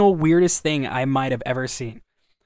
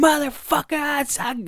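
mock screaming, much higher pitch; 12 semitones higher than usual. Retelling a bum on the opposite corner, retelling a bum's screaming. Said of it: "just screaming".

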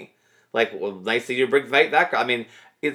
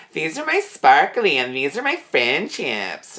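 childish, cutesy, sing-song put-on baby talk; 4 semitones higher than usual. Mimicking a woman answering about her bracelets, childish baby voice. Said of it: "her stupid baby voice ... she goes, just like this".

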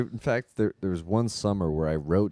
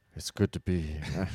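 put-on gruff, tough voice; 3 semitones lower, 4 dB quieter than usual. First guest arriving on the podcast, in a gruff Seagal voice. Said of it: "I was trying to go for Gruff Seagal".

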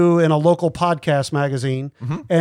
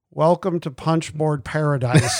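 mock sleepy dull monotone; 3 dB quieter than usual. Imitating how they used to read the podcast opening: imitating own old sleepy intro. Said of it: "I read the beginning part like this".

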